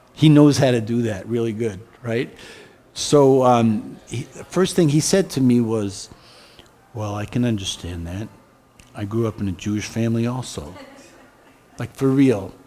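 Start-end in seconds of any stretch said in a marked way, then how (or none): 7.0-10.8 quiet, soft, hushed speaking voice. Retelling the first words Jesus said through a channeler: Jesus speaking very slow and soft. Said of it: "Jesus talks very slow and very soft".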